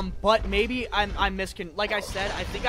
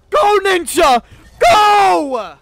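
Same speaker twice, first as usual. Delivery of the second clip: very loud, high, mic-peaking yell; 11 semitones higher, 16 dB louder than usual. Cheering on a game character named Zane: shouting loud enough to peak the mic. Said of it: "I'm sorry if that peaked the mic".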